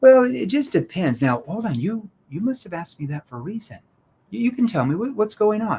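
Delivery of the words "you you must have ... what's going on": sympathetic, caring, concerned tone. Role-playing a conversation, in a concerned, empathetic tone. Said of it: "I want to ask this in a concerned tone, a tone that shows empathy".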